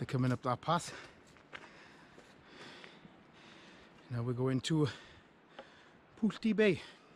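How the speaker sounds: slightly breathless, a little out of breath. Narrating a walk to Brandy Cove for viewers, a little out of breath. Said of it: "I'm a little bit out of breath".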